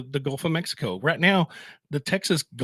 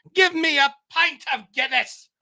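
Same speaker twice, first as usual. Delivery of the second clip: very high, fake, put-on Irish brogue; 12 semitones higher than usual. Joking about their Irish ways, the speaker orders a drink in a fake Irish accent. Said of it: "I like that accent".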